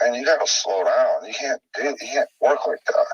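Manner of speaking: ordinary talk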